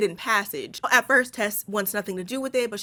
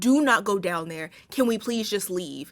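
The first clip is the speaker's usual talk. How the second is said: earnest, pleading, begging tone. Retelling a movie scene where Tess begs Keith: imitating someone begging. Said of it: "Tess is begging him".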